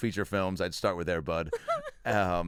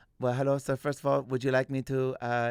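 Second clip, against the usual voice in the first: fake Mexican Tijuana accent; 5 semitones higher than usual. Retelling a comedy bit, playing a masseuse: put-on Tijuana masseuse accent. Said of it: "I did an impression of Lex going to get a massage in Tijuana".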